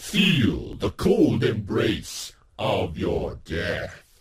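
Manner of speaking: loud, haunted, possessed, evil-sounding voice. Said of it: "sounds kind of haunted and kind of evil, maybe kind of possessed".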